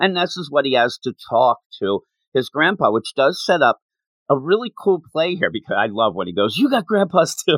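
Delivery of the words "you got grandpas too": mock excited exclamation, very high pitch. Retelling a boy's line on learning she has grandpas: imitating excited character. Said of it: "He's all excited".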